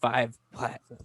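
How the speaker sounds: half-whispered, hushed, voice kept low. Telling the party the quest reward while keeping it low: half-whispering. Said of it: "I'm gonna whisper, kinda keep my voice a little lower".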